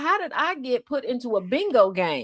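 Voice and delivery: ordinary talk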